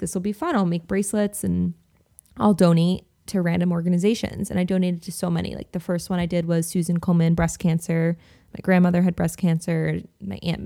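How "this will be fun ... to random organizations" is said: ordinary delivery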